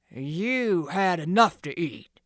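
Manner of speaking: booming, menacing loud growl, "you" drawn out. Reading a story, the thieves' ringleader speaks up in the barn, growled. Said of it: "he growled".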